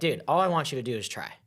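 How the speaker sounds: ordinary delivery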